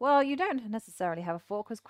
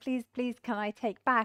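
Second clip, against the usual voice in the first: put-on little boy voice, pleading, begging tone; 3 semitones higher than usual. Acting out a player begging a teacher to take back a move: imitating a little boy pleading. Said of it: "like a little boy with his teacher and is looking at the teacher going".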